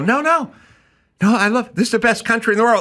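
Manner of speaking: mock, scornful, derisive patriot voice, words tripping, stammering. Retelling how people who grew up around the speaker talk: mocking imitation of these people. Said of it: "But instead they go".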